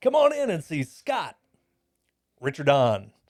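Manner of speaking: loud radio ad announcer voice. Retelling a radio ad playing at the dealership: radio voice. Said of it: "With your radio voice".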